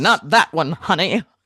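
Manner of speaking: voiced as a 1920s flapper dancer. Picturing the other speaker's inner soul as a smoking dancer: voicing a 1920s dancer. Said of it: "dressed like a nineteen twenties, like, you know, like, dancer".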